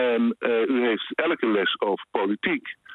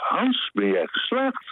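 mock stunned disbelief, very high and swooping; 13 semitones higher than usual. Retelling a man's reaction to the speaker passing, mimicking utter astonishment. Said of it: "in opperste verbazing".

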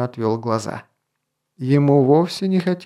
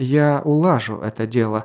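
plain

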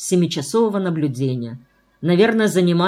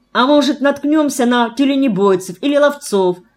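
glad, hopeful, joyful exclaiming, pitched up; 7 semitones higher, 4 dB louder than usual. The narrator, heading east toward the shore with Foma, speaks to him; joyful exclamation. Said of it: "радостно воскликнул я".

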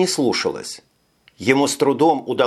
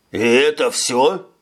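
incredulous, disbelieving, doubting tone. The older man questions Fyodor after the search, incredulous. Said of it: "Недоверчиво спросил старший".

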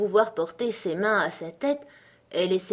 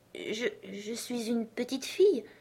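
soft, slow, hesitant, unsure voice; 3 semitones higher, 7 dB quieter than usual. A girl answers the pigeon's question in a hesitant voice. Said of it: "dit Alice d'une voix hésitante".

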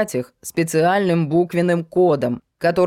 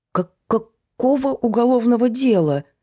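frightened, higher pitch; 5 semitones higher than usual. Sashka, told of a criminal case against her, asks which case: frightened. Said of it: "Сашке стало совсем страшно".

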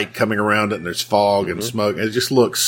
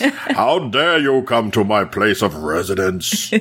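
put-on dynamic villain voice. Quoting the count from the film in his dynamic voice. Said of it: "he has a very dynamic voice".

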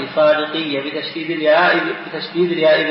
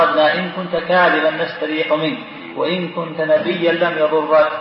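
ordinary talk, nothing marked

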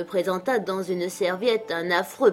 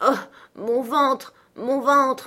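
stammering, stuttering, higher pitch; 6 semitones higher, 3 dB louder than usual. A woman answers the narrator, who keeps asking where it hurts, stammering. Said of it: "Elle balbutia".

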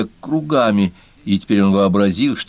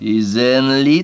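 contemptuous, scornful hiss, higher; 4 semitones higher than usual. A monster cat answers a fox cub's challenge with a contemptuous hiss. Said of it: "презрительно прошипело чудовище".

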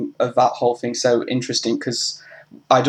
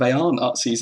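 ordinary talk

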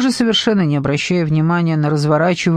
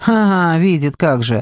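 ordinary delivery, nothing marked

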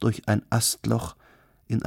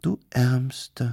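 purring, half pitying, half mocking. Cardelin answers the contrite Rüstem Bey, purring, half pitying, half mocking. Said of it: "schnurrte Cardelin, halb mitleidig, halb spöttisch".

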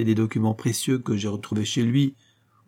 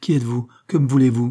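anxious, uneasy, louder and faster; 4 dB louder than usual. Narrating a woman startled by a stranger's voice, anxious. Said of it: "Anxieuse, elle se dressa d'un bond".

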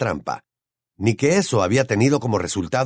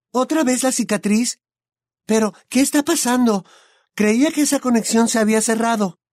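very high, alarmed, frightened voice; 12 semitones higher than usual. A narrator reads a character's question, in a frightened voice. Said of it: "dijo con voz de susto".

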